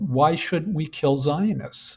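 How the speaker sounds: ordinary talk, nothing marked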